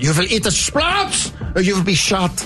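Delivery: put-on German accent. Recounting talking alone in the car, in a german accent. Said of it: "I started saying this in a German accent".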